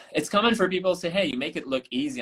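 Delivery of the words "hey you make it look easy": plain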